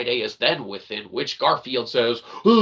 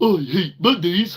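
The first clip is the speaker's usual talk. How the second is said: put-on cartoon cat voice, pitched up; 6 semitones higher than usual. Doing a Garfield impression: Garfield voice. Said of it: "Garfield therein is like".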